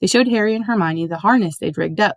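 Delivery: plain reading voice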